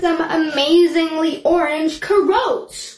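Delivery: put-on American accent. A young staff member reacting to a comedy show, in a fake American accent. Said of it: "Tosha is actually putting on an American accent".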